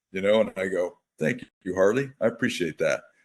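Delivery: ordinary talk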